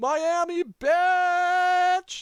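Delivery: shrill, very high shout, bitch stretched long. Narrating a scene where a voice comes from a radio: Jeff Nakafoli shouting. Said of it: "you hear Jeff shout".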